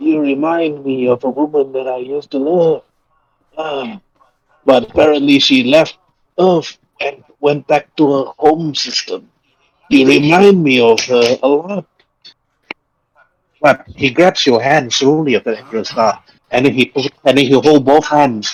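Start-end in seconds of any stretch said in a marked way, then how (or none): 0.0-11.9 put-on frail elderly voice, higher. Voicing an old man thanking a hero: frail old man voice. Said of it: "slowly speaks out in his, like, frail voice".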